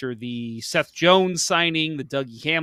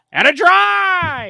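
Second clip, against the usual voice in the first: shrill, booming high bellow with "drive" held long; 9 dB louder than usual. You have just apologized for your impersonation, but you go on with a terrible Mike Emrick impersonation. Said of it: "that's my terrible Mike Emmerich impersonation".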